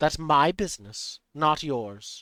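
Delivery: voice ringing and echoing as inside a helmet. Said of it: "the voice echoing from its helmet now".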